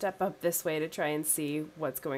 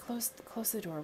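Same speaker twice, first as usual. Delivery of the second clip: hushed put-on voice, higher and quieter; 6 semitones higher, 7 dB quieter than usual. Playing a character near sleeping goblins, whispering to close the door. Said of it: "And I just whisper".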